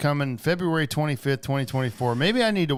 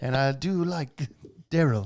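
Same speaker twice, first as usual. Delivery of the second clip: very bad, slow put-on British accent. Imitating an English actor talking about himself: bad British accent. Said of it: "the worst British accent ever".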